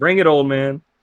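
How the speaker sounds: light, chuckling voice, laughing lightly while speaking. Voicing a character who chuckles at an older companion: chuckling. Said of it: "Irina just chuckles".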